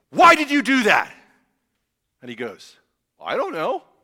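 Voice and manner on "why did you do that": full-on loud yelling. Showing how it would sound if they yelled at their children: yelled question. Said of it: "if I was going to, this is how it'd sound".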